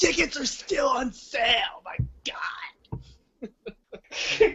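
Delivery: choked, breathy half-whisper pushed out. Doing a voice again after being asked: Don West voice. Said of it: "go into the Don West voice again".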